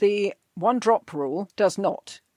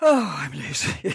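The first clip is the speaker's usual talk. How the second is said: mock unenthused, bored, low voice; 5 semitones lower than usual. A podcast host mimics her old episode intros, imitating own bored voice. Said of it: "I sound so bored".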